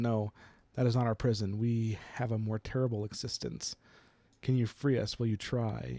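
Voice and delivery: ordinary talk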